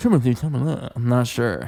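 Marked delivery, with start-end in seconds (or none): 0.0-0.9 terrible, fake, laid-on French accent. Saying a celebrity's name again in a terrible French accent as Timothée Chalamet. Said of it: "a terrible French accent that I'm doing?".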